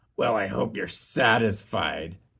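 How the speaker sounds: scornful, disdainful, contemptuous sneering rat voice. Narrator reads the rat's retort in a story, sneering. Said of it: "sneered the rat".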